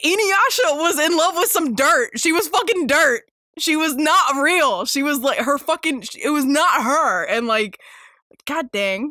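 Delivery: getting mad, venting hard. Talking about a show she rewatched, angry ranting. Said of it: "I'm getting I'm getting angry".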